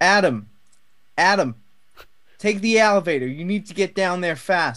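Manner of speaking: badly done, terrible put-on man's voice. Retell being told to take the elevator while you looked for candy bars, terrible Cyrus impression. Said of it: "doing a terrible impression".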